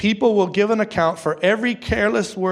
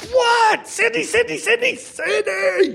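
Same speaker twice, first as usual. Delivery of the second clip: mock yell, very high and slow. Father retells yelling back at his daughter calling him; retelling yelling back. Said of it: "I yell back at her".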